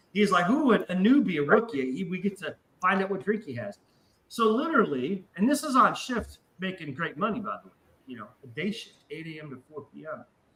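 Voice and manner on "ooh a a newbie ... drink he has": mock gleeful, excited cooing, delighted bartender voice. Retelling how the drunk bartender reacted to a new coworker: imitating a happy bartender. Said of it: "you could tell he was all fucking happy".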